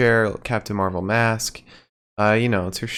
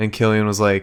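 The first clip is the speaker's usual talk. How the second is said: usual speaking voice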